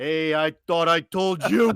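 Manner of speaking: unhurried, slow, leisurely voice. Imitating the gatekeeper at the tunnel scolding a visitor: imitating Ricky Spacuzza. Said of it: "he's standing there and he's like".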